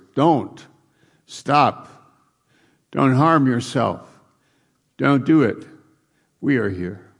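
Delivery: loud yelling at full voice. Retelling a story of casting out demons, acting out a loud shout. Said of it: "he's yelling out with a loud voice".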